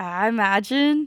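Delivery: joking, put-on Mexican accent. Discussing someone's tweet, the speaker does a mexican impersonation. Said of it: "That's my impersonation of a Mexican".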